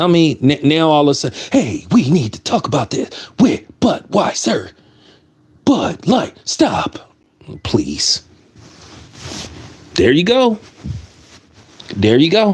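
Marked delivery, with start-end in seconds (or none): 1.5-8.2 stilted, wooden delivery like reading a bad script. Mocking complainers about Budweiser in the same overacted style: William Shatner impression. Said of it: "act like Captain Kirk, William Shatner".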